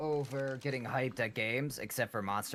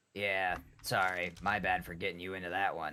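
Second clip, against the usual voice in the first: low, fast, dripping with sarcasm. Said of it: "as sarcastic as text can hold".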